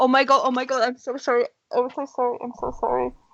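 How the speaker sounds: panicky, panicked, repeated words. Player voicing Hilda as she pushes herself away from Vic: panicked apology. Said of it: "she kind of panics a little bit".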